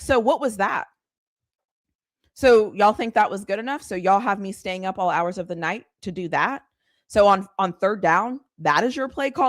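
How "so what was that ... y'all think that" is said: ordinary delivery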